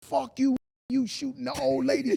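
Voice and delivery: mock hoarse, raspy cursing outcry. Retelling bursting into a house to confront a friend, retelling a scream. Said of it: "I come in this house screaming".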